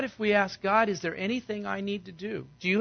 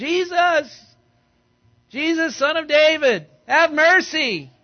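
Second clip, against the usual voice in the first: very loud, drawn-out screaming; 7 semitones higher, 10 dB louder than usual. Retelling blind men crying out to Jesus for mercy: acting out a scream. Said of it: "They're screaming".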